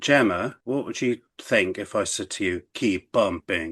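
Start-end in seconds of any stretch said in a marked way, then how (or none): 2.7-3.7 put-on Austrian accent. Asking Gemma what she would think if told this: Arnold Schwarzenegger impression. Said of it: "that was my Arnold Schwarzenegger impression".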